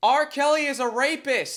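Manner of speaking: shrill, very high, very loud top-of-lungs shout. Retelling what a woman yelled while the music played: imitating a woman yelling. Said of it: "I've never heard someone yell louder in my life".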